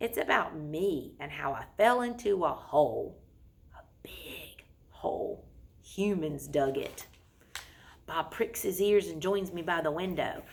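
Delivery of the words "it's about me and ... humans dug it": dropped, low, slow, hushed, confiding voice. Ruby starts telling a story about herself, in a lowered voice. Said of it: "Ruby lowers her voice".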